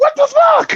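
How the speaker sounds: very high, panicked, startled, scared yelp. Retelling how Gabe sounded when a peacock scared him: imitating Gabe's high-pitched scared yell. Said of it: "his high pitch when the peacock scared him".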